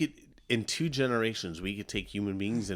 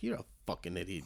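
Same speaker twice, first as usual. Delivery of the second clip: muttered under breath, much lower and quieter; 2 semitones lower, 9 dB quieter than usual. Acting out a friend's reaction to a dog's name, muttered under breath. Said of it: "Under his breath".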